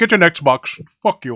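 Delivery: shouted, very loud blast. Acting out a phone call to support: imitating a Sony phone agent. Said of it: "You call, he go".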